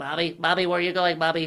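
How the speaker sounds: put-on dog voice. In an interview, speaker does Oreo's voice, calling out to Bobby. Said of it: "with the Oreo voice".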